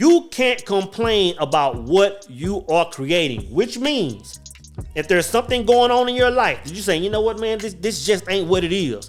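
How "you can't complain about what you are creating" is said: very slow, low, deliberate, each word spaced. Speaker repeating a point for the audience, saying it real slow. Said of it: "I'm gonna say that real slow".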